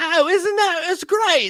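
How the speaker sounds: very high, loud, slow, stretched-out ladylike voice. Retelling what a lady said, Mrs. Doubtfire-like voice. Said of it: "was like Missus Doubtfire".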